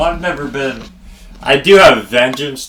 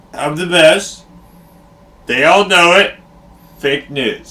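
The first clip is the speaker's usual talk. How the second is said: high-pitched, boastful, bragging voice; 5 semitones higher than usual. Trying the impression again after being told it was bad: Donald Trump impression. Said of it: "But he does, like, the".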